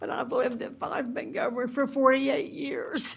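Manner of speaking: near tears, on the verge of crying. Giving her name and address for the record, a resident on the verge of tears. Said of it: "I'm going to cry when I say it".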